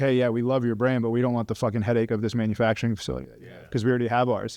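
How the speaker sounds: ordinary talk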